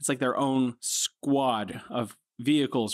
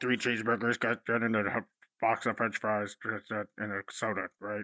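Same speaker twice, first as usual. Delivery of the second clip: put-on muffled voice, as if mouth-covered; 2 semitones lower, 4 dB quieter than usual. Describing hard-to-understand drive-thru orders, the speaker imitates the intercom: muffled drive-thru speaker voice. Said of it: "Were you just covering your mouth?".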